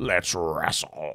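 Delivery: put-on scratchy alien voice. Retelling how the alien sounded in earlier episodes: imitating Four Arms' scratchy voice. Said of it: "he was kinda, like, scratchy".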